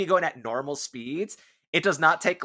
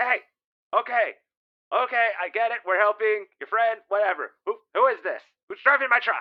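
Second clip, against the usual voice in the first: raised, pitched-up reptilian lizard alien voice; 5 semitones higher than usual. A game narrator voices the Trandoshan on the truck's comms: Trandoshan voice. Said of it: "you hear Trandoshan on the comms".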